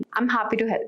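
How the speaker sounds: flat, uninterested monotone delivery. Demonstrating how tone changes a phrase's meaning, monotone and indifferent. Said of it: "monotone or indifferent tone".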